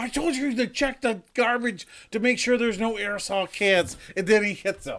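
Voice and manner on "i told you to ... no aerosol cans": put-on high, angry, scolding ranting tirade. Retelling how one man came out and yelled at another, imitating someone screaming. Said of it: "He starts screaming at him".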